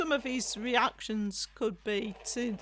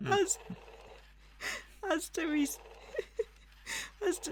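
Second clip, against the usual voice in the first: giggling through words, higher; 8 semitones higher, 3 dB quieter than usual. Describing a toy's moving parts while cracking up: laughing while talking. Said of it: "it's cracking me up".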